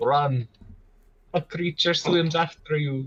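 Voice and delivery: botched, vampire-like attempted Russian accent. Warning another player in character to flee, attempted Russian accent. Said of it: "You sound more like Dracula".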